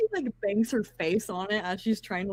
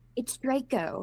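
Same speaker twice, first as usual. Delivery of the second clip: mildly miffed, little huffy tone. Playing a character correcting someone's name before storming out: huffy. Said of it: "just a little huffy".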